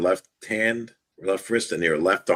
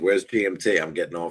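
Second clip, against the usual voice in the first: usual speaking voice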